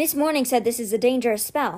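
ordinary talk

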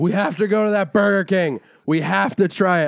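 mock drunk, loud, loopy, insistent, hammered-sounding voice. Retelling a friend begging to go to Burger King: imitating Colleen sounding drunk. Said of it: "I'm making it sound like she was hammered".

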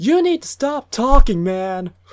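very high, loud screamed outburst. Retelling a moviegoer yelling at a talker during the movie: retelling a scream. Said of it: "another guy just screamed out loud".

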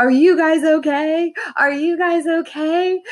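high-pitched, frantic, panicked shout. Parent retelling running into the kids' room: reenacting their own screaming. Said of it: "I started screaming".

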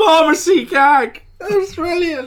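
very high, drawn-out, delighted shout. Recounting watching a scene and what they yelled, retelling a yell. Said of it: "I literally just yelled".

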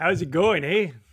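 put-on loud, belted-out Canadian accent. Joking about two Canadians, answering with a Bob and Doug McKenzie impression. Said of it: "Bob and Doug McKenzie".

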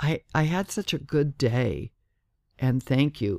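ordinary talk

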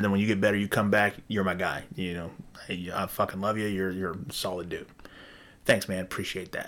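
ordinary delivery

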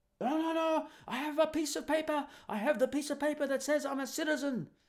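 upset, very high-pitched put-on Indian accent. Retelling what the upset taxi driver said: imitating the taxi driver's accent. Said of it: "His accent, of course, wasn't like that".

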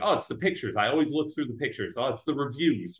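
ordinary delivery

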